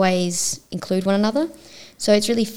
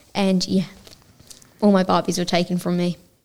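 ordinary talk, nothing marked

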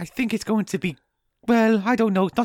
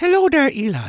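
loud, put-on Irish brogue; 4 semitones higher, 6 dB louder than usual. Speaker voices a little potato greeting Eli, Irish-accented Mr. Potato voice. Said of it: "Is he an Irish stereotype?".

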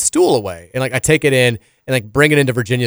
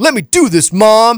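very high, slow, stubbornly defiant; 9 semitones higher, 5 dB louder than usual. A parent recounts her son defying her: imitating John's defiant voice. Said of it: "in, like this very like just defiant voice".

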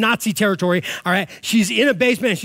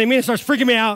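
ordinary delivery

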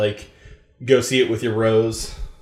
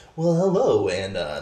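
slow, formal, put-on podcast-host voice. Podcaster mimics how he opened the first episode, in a formal podcast host voice. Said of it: "this is my NDR voice".

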